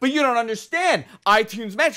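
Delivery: shrill, very high, exasperated, frustrated scream. Speaker retells losing their mind yesterday, re-enacting screaming at Jess. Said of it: "And I'm screaming at Jess".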